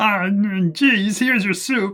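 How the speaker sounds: very slow, loud puppet-like character voice. Voicing Cloven bringing soup to the players: different character voice for Cloven. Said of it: "I'm gonna give him a different voice".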